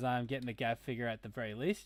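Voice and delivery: ordinary talk, nothing marked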